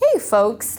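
put-on Midwestern accent. Describing how a character was pictured, demonstrating a Midwestern accent. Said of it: "that was my best Midwestern accent".

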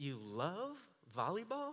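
incredulous, condescending, talking-down tone. Retelling a clinic coach's reply to him: imitating someone talking down. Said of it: "Like I was a moron".

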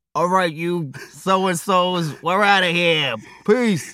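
very slow, loud, drawn-out put-on Boston accent. Asked to say goodbye at the end of the show, in a Boston accent. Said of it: "say goodbye in a Boston accent".

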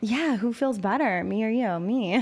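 plain

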